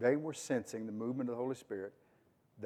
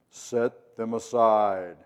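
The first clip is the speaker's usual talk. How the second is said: deep, booming, very loud, very male voice; 11 dB louder than usual. Wondering how the Spirit's command was heard, speak it in a deep, very male voice. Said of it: "A deep, very male voice?".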